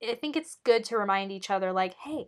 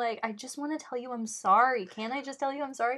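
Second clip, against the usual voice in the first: acted-out pleading, apologetic voice; 4 semitones higher than usual. Recapping a scene where a man cries, quoting his apology: retelling a plea. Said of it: "when he starts pleading".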